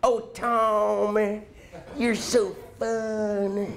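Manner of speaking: very slow honeyed Texas drawl, "fun" stretched. Quoting the speaker's high school sweetheart from Austin: deep, syrupy Texas accent. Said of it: "she had this deep, syrupy Texas accent".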